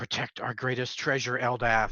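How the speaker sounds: barely audible private mumble under the breath. Playing a character running an enemy through with a sword: mumbling under breath. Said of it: "I kind of mumble up under my breath".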